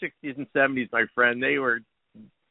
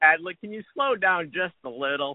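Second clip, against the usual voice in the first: usual speaking voice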